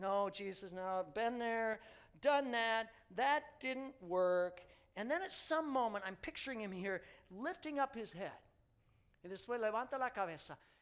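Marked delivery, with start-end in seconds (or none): none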